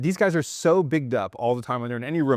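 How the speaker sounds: ordinary delivery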